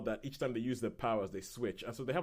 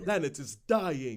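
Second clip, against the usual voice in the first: loud, mock, put-on Shakespearean accent; 2 semitones higher, 5 dB louder than usual. Discussing a film, quoting his own line in a mock Shakespeare accent. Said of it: "doing a mock Shakespeare accent".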